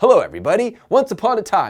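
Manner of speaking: loud, swooping morning-radio host voice. Suggesting audiobook narration, a speaker demos a morning radio show voice. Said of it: "like that morning show where you're driving to work like".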